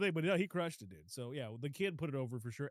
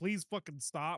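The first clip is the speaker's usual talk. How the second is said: put-on crying, tearful, pleading voice, tearing up. Retelling a film scene where Alex pleads while tearing up: imitating Alex crying. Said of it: "he was tearing up, crying, like".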